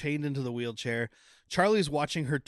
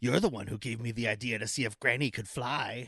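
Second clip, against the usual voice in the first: put-on evil, sinister voice, pitched lower; 3 semitones lower, 3 dB quieter than usual. Retelling a horror movie scene of a girl talking: imitating an evil voice. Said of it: "her voice getting all evil and going".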